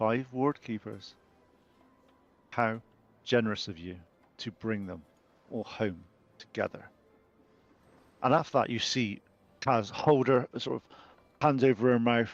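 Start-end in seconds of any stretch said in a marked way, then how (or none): 0.0-6.9 slightly lower, deeper, soft changed voice. Narrator voicing a character who looks at you and Bove, slightly lower-pitched voice. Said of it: "in a slightly lower pitched voice".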